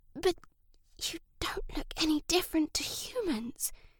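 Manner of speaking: high, soft, hushed storybook whisper. A boy new to the class questions the other pupils, whispering. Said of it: "he whispered".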